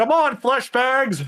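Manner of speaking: very high, shrill, taunting in-character yell. Voicing a character who yells out at the group: character yelling out. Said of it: "watching this resistance to yell out".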